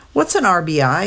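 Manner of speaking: ordinary delivery, nothing marked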